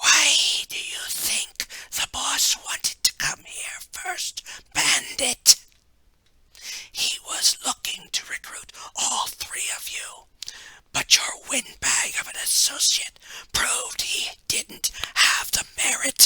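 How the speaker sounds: whispered, breathy, slithering snake-like hiss. Narrating a story, the cloaked figure answers Bandit in a snake-like voice. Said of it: "The cloaked figure laughed again and motioned for the other finger to bring up a case. / was that if you weren't on his team, / who spoke again in his snake-like voice. / who spoke again in his snake-".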